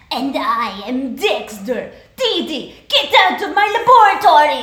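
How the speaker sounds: very loud, high-pitched, animated cartoon voice. Asked for a sample, the speaker performs a cartoon boy: Dexter character voice. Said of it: "Can I have a sample?".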